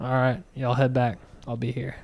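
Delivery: calm, immovable, unshaken stoic soldier's resolve. Retelling a war movie scene, imitating stoic Brad Pitt character. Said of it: "so stoic".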